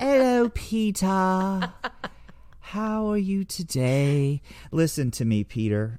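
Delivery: very high, put-on effeminate British accent. Addressing Peter during a bit, in an effeminate British accent. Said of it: "Whenever I talk in a British accent, I get very effeminate".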